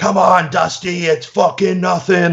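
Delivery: mock pumped-up yelling. Describing a workout video, quoting someone yelling at Dusty: retelling a yell. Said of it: "you can hear yelling".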